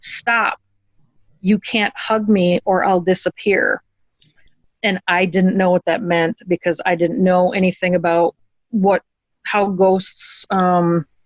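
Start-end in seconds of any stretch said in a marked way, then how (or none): 0.0-3.8 mock firm, strong, forceful voice. Retelling what a ghost said to the speaker, imitating a strong voice. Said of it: "in a, like, a strong voice".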